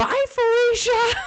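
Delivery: sudden holler, very high and very loud. Retelling how an author answered a fan question: imitating someone yelling. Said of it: "yells at me".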